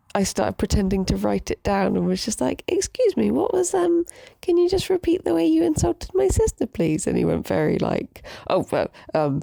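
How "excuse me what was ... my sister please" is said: politest possible voice, pitched very high. Retelling answering a rude man while pretending to write, in her put-on politest voice. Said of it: "in my like politest voice".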